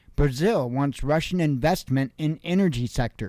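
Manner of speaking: ordinary talk, nothing marked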